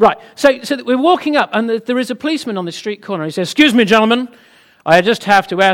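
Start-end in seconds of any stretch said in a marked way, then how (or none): 3.5-5.6 put-on American accent with raised voice. Telling a story, speaker voices a policeman on a street corner: attempted American accent. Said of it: "this is an American accent".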